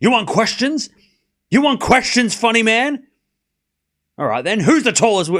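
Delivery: high, aggressive, confrontational tone. Rereading a question the way it sounded to him, mock-aggressive. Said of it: "it sounded aggressive".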